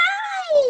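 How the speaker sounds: very high-pitched voice. Showing a child how an elephant might sound: high voice. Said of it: "sound like with a high voice".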